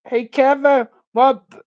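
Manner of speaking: put-on high, loud, childlike little-kid voice. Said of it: "I can't even talk like a kid".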